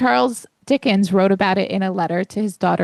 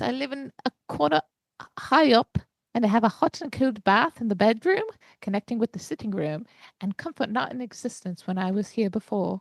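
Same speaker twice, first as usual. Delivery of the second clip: put-on English housekeeper voice; 3 semitones higher, 6 dB quieter than usual. Imagine the author writing in his bath with quill and parchment, in a bad Charles Dickens impression. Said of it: "And he goes".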